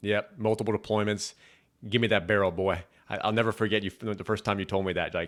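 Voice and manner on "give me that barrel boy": thick put-on Texas accent. Quoting an army veteran who trained the soldiers; thick Texas accent. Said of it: "he had a thick Texas accent".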